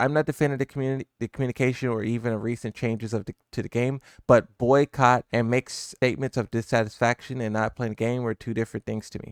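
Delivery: ordinary delivery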